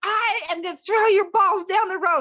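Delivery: shrill, high, loud yell. Retelling a shouting match down the street: imitating someone yelling. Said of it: "we're yelling down the street".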